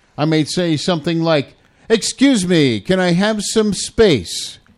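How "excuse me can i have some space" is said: token yell, stated more than truly shouted. Giving a travel tip about someone standing too close: very loud voice. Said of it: "in a very loud voice".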